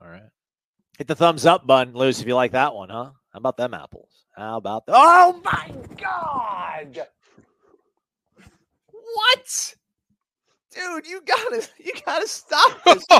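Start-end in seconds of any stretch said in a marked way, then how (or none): 5.0-13.1 shouting, higher. Reacting in surprise to a contribution from Joel, yelling. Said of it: "I'm sorry for yelling at you people".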